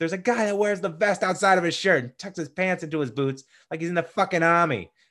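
put-on high-pitched Boston accent. Recounting a bank robbery movie, quoting Ben Affleck: Ben Affleck Boston accent. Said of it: "great Boston accent".

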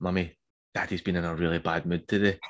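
put-on child whispering. Retelling how the oldest child told mummy about daddy: imitating a child whispering. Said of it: "I heard her whispering".

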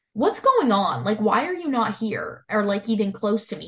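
ordinary talk

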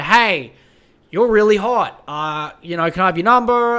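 normal talking voice

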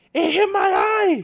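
sharp, shrill, loud, high-pitched yell. Retelling how a girl was hit in the eye, retelling a yell. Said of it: "She yelled".

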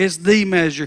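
"the" stressed and punched, with a falling close.

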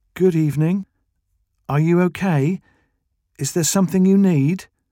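put-on slow, clear baby talk. Narrator voices Becky, crouched before a woman, speaking slowly and clearly as to a child. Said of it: "She spoke slowly and clearly, as if to a young child".

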